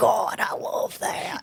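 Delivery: very slow, rough, rasping, creaky, drawn-out voice. Quoting a favorite bit from the one with the dog: Theo Von voice. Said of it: "I hear his voice in my head too, all the time with the one with the dog where he's like".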